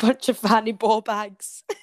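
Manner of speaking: put-on Scottish voice. Joking about Shrek played as a Glaswegian, Shrek with Glasgow accent. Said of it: "If Shrek was the Glasgow".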